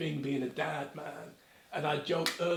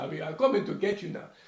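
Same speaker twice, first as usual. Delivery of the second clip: fake, mock Jamaican or African dad accent; 4 dB louder than usual. Speaker addressing a listener by name, put-on jamaican dad accent. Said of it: "I'll do a Jamaican or African dad".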